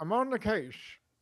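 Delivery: put-on old-time detective voice. Joking with the others about sounding old-fashioned: put-on old-time detective voice. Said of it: "like a detective".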